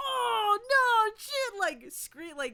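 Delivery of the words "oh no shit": mock startled outcry, high and yelled. Retelling how the theater audience reacted to the movie: imitating audience yelling. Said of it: "yelling, screaming".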